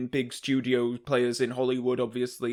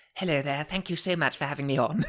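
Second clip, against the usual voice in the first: put-on grand dame voice; 3 semitones higher than usual. Greeting the hosts as a guest: Judi Dench impression. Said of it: "Dame Judy".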